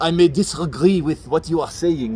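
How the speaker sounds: awful, horrible put-on French accent. Doing a famous quote as a Frenchism, in a horrible French accent. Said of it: "that horrible French accent".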